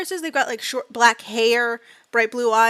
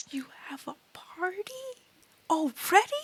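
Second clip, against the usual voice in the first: stunned, very hushed, high-pitched shocked voice; 7 semitones higher, 9 dB quieter than usual. Reacting to someone introducing his teammates, shocked. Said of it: "Why do you sound so shocked?".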